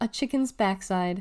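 usual speaking voice

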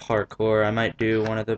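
plain reading voice

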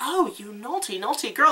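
syrupy, honeyed, sugary sweet teasing voice. Imitating the villain Yura from the show: sweet voice imitating Yura. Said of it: "She's got the sweetest voice".

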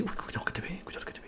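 soft, hushed, nervous whisper.

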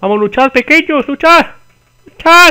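overexcited, carried away, shrill, high and rising pitch. Streamer urging their little fighters on in a game: overexcited. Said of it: "Perdón, me he emocionado demasiado".

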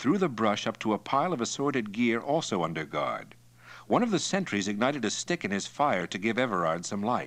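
ordinary delivery

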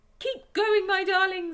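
shrill, high, loud, breathless panting call. Narrator reads the fox urging his darlings on as shovels scrape behind, panting. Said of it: "panted Mr. Fox".

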